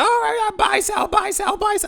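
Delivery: shrill, very high hollering and screaming. Describing traders on Wall Street floors, imitating them: screaming floor trader voice. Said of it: "what terrible voice".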